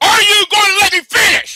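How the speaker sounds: screaming. Arguing with another speaker who keeps interrupting: screaming. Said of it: "you screaming again".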